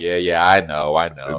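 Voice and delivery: mock sarcastic tone. Retelling a character's answer to being teased: imitating a sarcastic reply. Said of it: "kind of, like, sarcastic".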